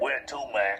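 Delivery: classic big-city cab driver voice. Recounting getting into a cab, imitating the driver's voice. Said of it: "a voice came out the other like this".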